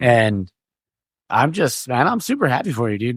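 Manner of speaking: voice breaking, cracking slightly. Telling a friend he's super happy for him, voice cracking a little. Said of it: "My voice started to crack there a little bit".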